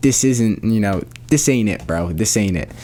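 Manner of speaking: plain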